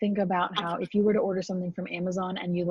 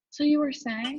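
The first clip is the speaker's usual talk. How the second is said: unbothered, composed, calm, slightly raised polite pitch; 8 semitones higher than usual. Retelling how a student, after yelling at his mom, turned back to the professor: imitating a calm tone. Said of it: "very calmly goes back to the professor".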